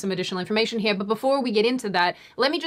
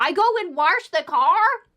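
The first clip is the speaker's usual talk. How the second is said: terrible put-on Midwestern accent, pitched up, "warsh"; 8 semitones higher, 4 dB louder than usual. Mocking her mum's way of speaking, in a terrible Midwestern accent. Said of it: "your terrible Midwestern accent".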